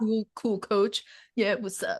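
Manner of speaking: casual, laid-back dude-bro gym voice. Describing clients who want short replies, the speaker does a gym bro impression. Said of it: "that's my gym bro um impression".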